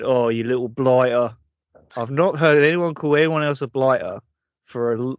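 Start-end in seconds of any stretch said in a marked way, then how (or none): 0.0-1.4 fake Cockney accent, much lower. Quoting what a man said in recent episodes, fake Cockney accent. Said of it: "the fake Cockney accent really stands out".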